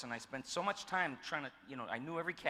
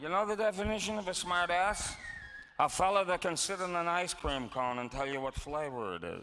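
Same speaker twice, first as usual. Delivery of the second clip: put-on marble-mouthed voice, higher and louder; 5 semitones higher, 6 dB louder than usual. Describing a vaudeville toastmaster and imitating his marble mouth. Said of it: "he'd be like".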